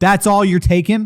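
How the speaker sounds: mock-annoyed parent voice. Retelling dinner with a parent who objects to small portions: imitating an angry parent. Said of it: "and they'll get pissed off".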